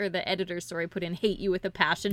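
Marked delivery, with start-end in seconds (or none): none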